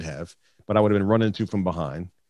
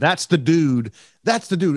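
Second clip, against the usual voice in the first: mock heated, worked-up, angry raised yelling; 7 semitones higher, 4 dB louder than usual. Retelling pointing out the truck driver to police: imitating own past yelling. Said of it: "So I start going off".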